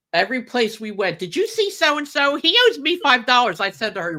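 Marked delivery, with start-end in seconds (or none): 1.1-3.6 loud, high-pitched hollering. Retelling how the godmother went around asking after a debt: imitating someone yelling. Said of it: "she's yelling at everybody".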